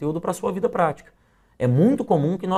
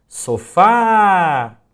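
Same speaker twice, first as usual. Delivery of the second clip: final syllable fá of sofá stretched long; 3 semitones higher, 9 dB louder than usual. Showing the stressed syllable in portuguese, stretched last syllable fá. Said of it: "Note que a sílaba fá, ela se prolonga".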